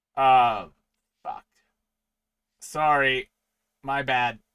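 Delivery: loud, booming giant sea monster voice. Voicing a massive kraken that appears in front of the party: kraken voice. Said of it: "it just simply looks down at you all and says".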